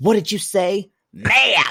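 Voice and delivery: high, stern mother voice. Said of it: "my mother would say".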